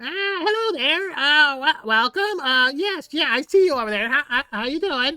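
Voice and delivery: shrill, high, loud kobold voice, stumbling. Voicing a kobold who greets the party from across the water: Jiro the kobold voice. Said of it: "this kobold face emerges".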